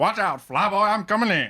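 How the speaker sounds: put-on old-time Alabama accent, very high pitched. Two speakers joking about Star Wars characters: 1950s Alabama accent. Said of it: "it's Alabama accent from like the 50s".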